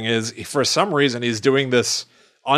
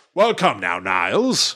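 put-on posh accent, much lower; 3 semitones lower than usual. Speaker explaining how the character Frasier talks, quoting him: posh Frasier voice. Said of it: "Just posh".

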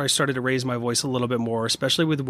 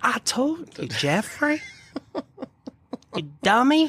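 very high, angry, scolding southern twang; 12 semitones higher than usual. Speaker retells a woman throwing his things out, imitating her angry southern twang. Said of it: "She get that southern twang".

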